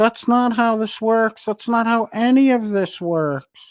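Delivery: put-on very high, entitled old-lady voice. Quoting the old lady, the speaker mocks her in a Karenish old-lady voice. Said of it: "that kind of fucking Karenish old lady".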